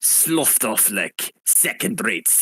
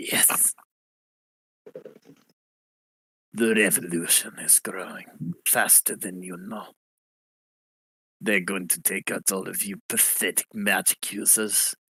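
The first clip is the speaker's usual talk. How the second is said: put-on Russian accent in a villain voice; 2 semitones lower, 4 dB quieter than usual. Voicing a revolutionary who threatens magic users: Russian accent. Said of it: "he's got a Russian accent".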